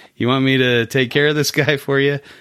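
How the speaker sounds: put-on Australian accent. Retelling what a neighbor in the mob said, in an australian accent. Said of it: "in an Australian accent".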